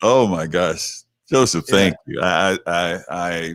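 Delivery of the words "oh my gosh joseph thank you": choked-up voice catching with emotion. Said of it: "I'm choked up".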